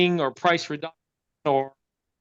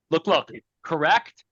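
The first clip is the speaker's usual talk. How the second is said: ordinary talk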